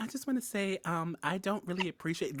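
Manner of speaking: soft-spoken, gentle voice. Acting out a buff game character who speaks politely: soft voice. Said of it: "with the soft voice".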